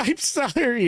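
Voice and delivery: acted out, very high, tearful wailing bawling sob. Retelling a crying driver's reply after being yelled at: imitating someone bawling. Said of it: "she's bawling".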